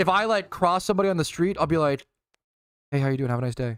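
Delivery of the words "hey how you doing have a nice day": quiet, mumbled, too-quiet voice. Retelling greeting someone on the street: imitating own too-quiet greeting. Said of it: "I talk too quietly".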